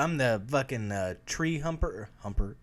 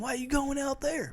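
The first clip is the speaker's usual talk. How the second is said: fake southern drawl, higher pitch; 11 semitones higher than usual. Acting out a made-up exchange about going into the woods: put-on southern accent. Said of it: "Now I'm doing a southern accent".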